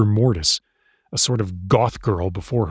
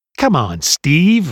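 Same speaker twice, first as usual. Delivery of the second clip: high, scornful, sneering voice; 6 semitones higher, 4 dB louder than usual. The leader of a little biker group circles the narrator, sneering. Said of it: "Reed sneered".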